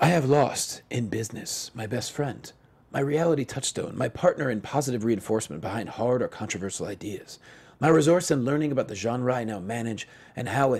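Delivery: feigned somber, mock-solemn delivery. Reading aloud an executive's Facebook post, in a put-on somber tone. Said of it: "say it in a very um, somber tone".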